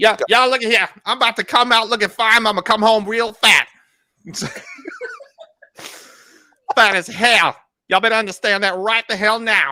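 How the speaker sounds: very high-pitched, loud voice full of sass. Planning a food trip with friends, the speaker breaks out a Madea voice. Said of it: "break out my Medea voice for this one".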